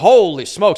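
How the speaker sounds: put-on very loud, belted delivery in New York accent. Describing a favorite CNN analyst to listeners: Harry Enten New York accent. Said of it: "he's got like this New York accent".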